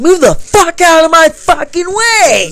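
put-on, rude, high, shrill yell. Retelling a woman pushing people aside, imitating her yelling. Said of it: "she's like yelling".

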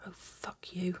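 very quiet, menacing, barely audible deadly whisper. A woman, told by Ben she is getting married today, answers in a deadly whisper. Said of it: "Her voice drops to a deadly whisper".

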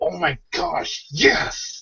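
very slow, whispered, overwhelmed excitement. Describing a favorite part and re-enacting past reaction, retelling uncontrollable excitement. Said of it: "going out of control".

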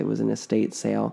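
ordinary delivery

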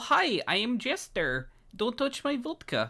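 very high, swooping, sing-song character accent. Trying to see if you can copy the accent just demonstrated, not-quite-right Jester accent. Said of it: "Darn it, so close".

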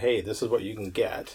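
plain

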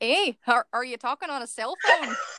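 attempted, fake put-on Canadian accent. Given the suggestion Canadian, a performer tries an attempted Canadian accent. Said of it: "Canadian. Just say A a lot".

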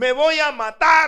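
put-on very loud, high teenage outburst. Retelling yelling at mom at fifteen after being refused a party, retelling a shout. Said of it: "Le grité a mi mamá".

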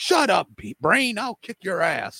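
very high, wild, swooping outburst. Retelling old wrestling commentary: Gorilla Monsoon impression. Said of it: "Gorilla Monsoon be like".

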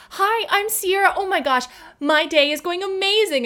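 chipper customer-service voice. Showing the customer service voice that sometimes comes out: bright customer service voice. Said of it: "I used to have this like customer service voice".

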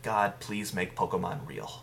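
normal talking voice

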